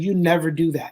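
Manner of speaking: very stern, firm telling-off tone. Retelling a warning given to the kids: imitating a stern warning. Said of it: "I said it very sternly".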